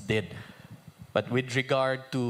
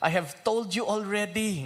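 mocking, sarcastic tone, pitched up; 9 semitones higher than usual. Reading aloud the healed man's answer to the questioners: sarcastic. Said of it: "in a sarcastic way".

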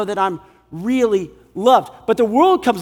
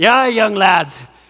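put-on Scottish voice, accent put on; 4 dB louder than usual. Speaker quoting a biblical scholar addressing young lads, in a Scottish accent. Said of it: "this is a great Scottish accent".

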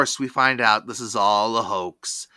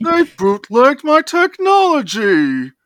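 very high, squeaky, loud, sing-song cartoon alien voice; 13 semitones higher, 8 dB louder than usual. Asked to repeat a line, the speaker does a Marvin the Martian voice. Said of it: "that's like the Thurston Howell version of Marvin the Martian".

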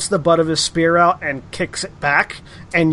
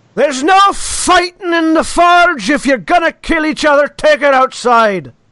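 loud, commanding, raised yell; 9 semitones higher, 5 dB louder than usual. Voicing a cleric of the forge who stops a fight: yelling forge cleric. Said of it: "as a cleric of the forge yells".

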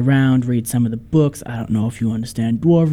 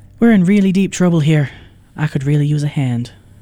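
put-on trying for an Irish accent; 3 semitones higher than usual. Voicing a character calling out for help to the group, in an Irish accent. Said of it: "but it's in an Irish accent".

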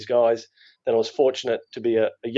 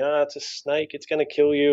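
mock small, restrained scream of alarm; 4 semitones higher than usual. Retelling a preschool teacher's reaction to a lizard: imitating a screaming teacher. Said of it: "the teacher screaming".

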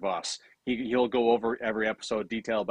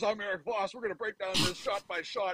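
loud yelled intro-style voice, higher pitch; 10 semitones higher, 6 dB quieter than usual. Imitating how Eric Voss opens his videos: imitating Eric Voss yelling. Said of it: "and he yells".

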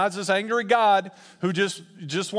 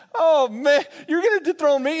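derisive, laughing, pitched-up scornful tone; 7 semitones higher, 4 dB louder than usual. Explaining a psalm, the speaker voices god's reply: acting out mocking laughter. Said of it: "laughing in such a mocking tone".

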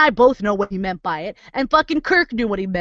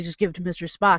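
put-on snide under-breath mutter, quieter; 5 semitones lower, 6 dB quieter than usual. Retelling a Star Trek scene, the speaker mimics a crewman's snide mutter under his breath. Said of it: "he says under his breath like an asshole".

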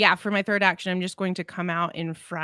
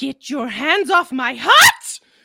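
booming, swinging, loud, shrill in-character shout; 6 semitones higher, 9 dB louder than usual. Narrating a game scene, voice a character as she shouts, in-character shout. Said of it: "She's just going to shout".

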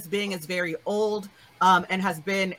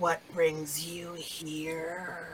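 very deep, raspy, hushed creature voice, here stretched; 8 dB quieter than usual. A creature's eyes lock on the visitors and it questions them, very deep, raspy voice. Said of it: "it says in a very deep, raspy voice".

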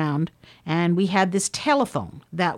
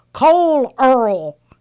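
insistent, high, loud, growing louder; 6 semitones higher, 8 dB louder than usual. Recalling a man getting louder on the phone, retelling his shout. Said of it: "his voice would get louder".

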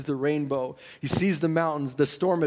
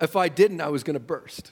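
normal talking voice

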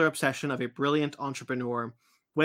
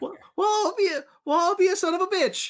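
very high, pitched-up voice.

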